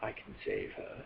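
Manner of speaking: deep, hushed British voice, nearly whispered. Retelling a film scene where a voice is heard offering help, in a deep British voice. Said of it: "in a really deep British voice".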